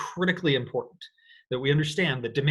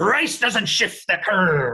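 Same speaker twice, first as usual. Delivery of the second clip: loud, well-done put-on pirate voice; 4 semitones higher, 6 dB louder than usual. Showing listeners how to repeat a phrase, in the very best pirate voice. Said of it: "do this in your very best pirate voice".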